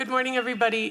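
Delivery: voice at full volume. Introduced to the group, a recovering addict greets everybody in a loud voice. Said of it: "whoop, I got a loud voice".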